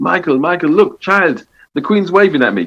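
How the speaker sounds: put-on West Indian accent, pitched high. Recall your late mother speaking to you at Royal Ascot, imitating her West Indian accent. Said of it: "in a West Indian accent said".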